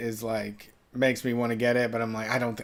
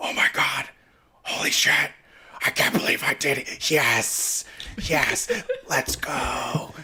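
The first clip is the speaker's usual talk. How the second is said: excited, drawn-out, held-in whisper-yell; 2 semitones higher than usual. Retelling a player's quiet celebration while someone slept: imitating someone whisper-yelling in excitement. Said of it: "he couldn't be loud".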